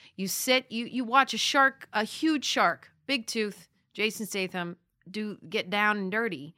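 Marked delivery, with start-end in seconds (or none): none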